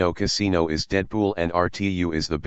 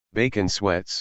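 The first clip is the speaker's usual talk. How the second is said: usual speaking voice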